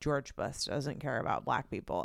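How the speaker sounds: whispered, breathy, hushed deadpan, dead serious. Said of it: "deadpan looked at the camera and was like".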